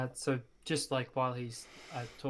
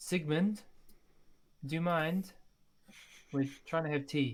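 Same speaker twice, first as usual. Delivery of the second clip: calling out across a distance; 4 semitones higher than usual. Calling out in character to a companion during tea: calling out. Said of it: "I'll call out to him".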